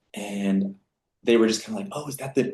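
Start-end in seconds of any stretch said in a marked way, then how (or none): 1.9-2.5 whisper, higher and quieter. Retelling classmates noticing a new student: imitating someone whispering. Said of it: "I could hear him whispering".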